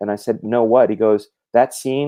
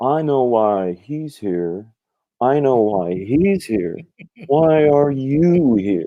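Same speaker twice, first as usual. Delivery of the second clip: slow, very Hollywood manner of talking; 3 semitones higher than usual. Retelling what a manager said at an after party: very Hollywood manner. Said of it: "he says to me in a very Hollywood way".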